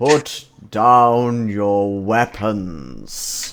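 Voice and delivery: loud, booming, very slow, resonant voice. Imagining a voice with superior reverb, doing a Christopher Lee voice. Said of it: "as Christopher Lee as I possibly can".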